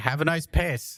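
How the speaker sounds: loud called-out yell. Retelling walking out of a bathroom, the speaker acts out yelling a parting line. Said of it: "and I just yelled".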